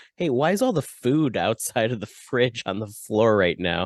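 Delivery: ordinary delivery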